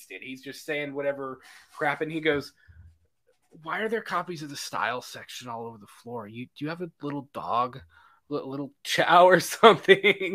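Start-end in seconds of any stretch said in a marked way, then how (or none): 3.6-10.4 put-on drunk man voice. Quoting a movie scene where a slumped-over character is wasted: imitating a drunk man. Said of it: "he's wasted".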